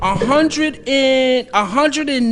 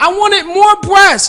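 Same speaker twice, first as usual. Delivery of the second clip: put-on screaming, higher and louder; 7 semitones higher, 6 dB louder than usual. Retelling his reaction when the box held one breast: retelling his own scream. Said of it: "I'm screaming like".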